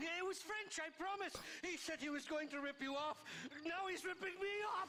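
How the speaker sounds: bad put-on Irish accent. Game character denying blame to another character: bad Irish accent. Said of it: "The Irish accents are so bad".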